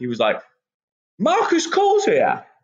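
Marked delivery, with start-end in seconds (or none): 1.2-2.4 put-on high-pitched, thick Brummie accent, called out loudly. Retelling a man shouting an introduction from the back: Trent Seven's thick Brummie accent. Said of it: "in his thick Brummie accent".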